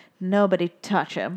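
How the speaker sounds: low, gurgling, dead serious voice. Retelling a story where a serious fish tells the others, in Gil's deep, gurgly voice. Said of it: "a deep, gurgly voice".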